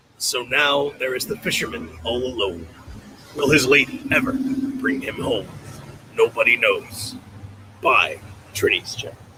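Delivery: grand, epic movie trailer narrator voice. Narrating the fisherman's story, epic movie trailer voice. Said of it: "epic movie trailer voice like I just did".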